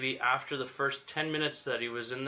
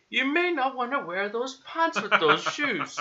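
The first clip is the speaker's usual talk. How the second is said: put-on, pretty bad British accent, high and loud; 11 semitones higher, 7 dB louder than usual. Imagining Nigel following the speaker around, bad British accent as Nigel. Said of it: "So that's my that's my British accent".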